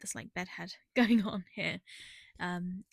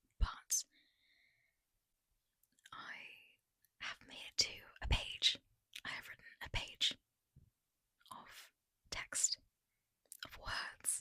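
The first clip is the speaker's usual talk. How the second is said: whispering, quieter. Late at night, the speaker gives a writing progress update, whispering. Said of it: "so I'm gonna whisper".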